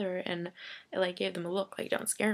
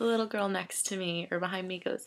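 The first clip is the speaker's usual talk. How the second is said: ordinary talk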